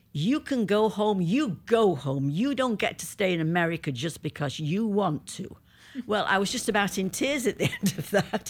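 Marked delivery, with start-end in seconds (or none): 0.1-5.5 put-on American accent. Speaker recounts asking border control to stay longer, doing put-on american accent. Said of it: "Now I'm going to do my American accent".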